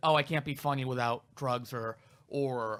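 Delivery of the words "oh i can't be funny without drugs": plain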